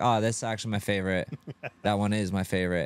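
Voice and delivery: ordinary talk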